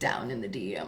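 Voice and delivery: very low, soft joking voice. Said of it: "I had to do that".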